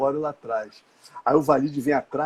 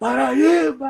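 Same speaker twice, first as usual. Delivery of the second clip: put-on very high, raspy, rough, loud shrill yell; 11 semitones higher, 3 dB louder than usual. Retelling a passenger shouting from his seat on a plane, a loud shout. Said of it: "Acorda o avião inteiro".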